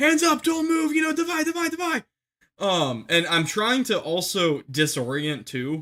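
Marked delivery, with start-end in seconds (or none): 0.0-2.0 mock very high, full-throated, top-of-lungs screaming. Retelling ordering a man to put his hands up: imitating his own screaming. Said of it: "I was screaming Divide at the top of my lungs".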